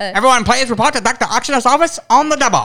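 put-on loud, high, eerie old-timey transatlantic accent. Acting out an old summons to a doctor's office, in an old-timey German-English voice. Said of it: "that does sound kind of German, English, kind of eerie".

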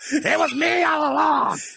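imitated high shouting voice. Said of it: "Vince McMahon".

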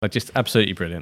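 ordinary talk, nothing marked

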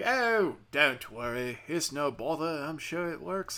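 slow, drawn-out put-on Australian accent. Retelling a call with a fraud department agent: put-on australian accent. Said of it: "He's fucking Australian now".

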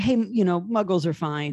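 usual speaking voice

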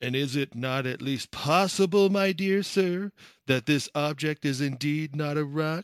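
put-on smarmy, ingratiating voice. Predicting the listener's reply about the rock, mimicking it in a mock smarmy tone. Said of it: "in some smarmy tone of voice".

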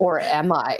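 sudden, serious, no-joke tone. Describing how she teases people by switching to a mock-serious voice. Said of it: "in a serious voice".

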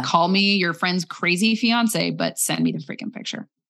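ordinary delivery

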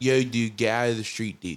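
put-on Jersey-ish accent. Demonstrating how certain people pronounce words, in a Jersey-ish accent. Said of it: "It's a Jersey-ish".

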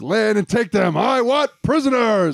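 acted, full-on yelling, screamed at high pitch. Recounting the scene, imitating Flog screaming. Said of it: "Like, screaming it".

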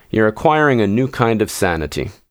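ordinary delivery, nothing marked

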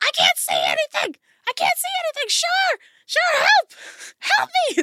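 very high-pitched, loud, panicked screaming. Voicing a blinded character stabbing wildly, screaming: Dale screaming. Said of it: "And Dale screaming".

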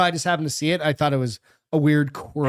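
plain

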